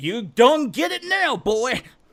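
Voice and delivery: put-on drawling Louisiana accent, loud. Imitating a game villain yelling while attacking: Jack's Deep South Louisiana accent. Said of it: "Deep South Louisiana accent you could expect to ever hear".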